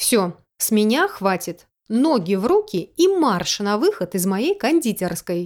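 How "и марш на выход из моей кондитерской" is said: ordinary delivery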